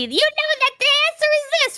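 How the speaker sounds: mock yelling voice. Describing shouting answers at a game show on tv: imitating yelling at the tv. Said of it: "you're yelling at T V".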